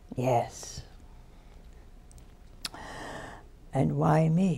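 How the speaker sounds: hushed, kind, gentle whisper, slow. Retelling the answer he got to his question, speaker quotes in a gentle, kind voice. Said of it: "in a very gentle, kind voice".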